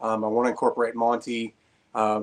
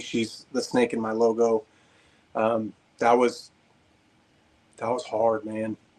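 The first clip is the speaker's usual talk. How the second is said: choked up, holding back tears, much slower. Speaker talks about his snake that recently died, getting choked up. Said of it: "I probably will get choked up".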